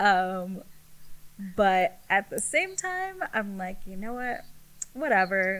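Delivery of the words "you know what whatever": normal talking voice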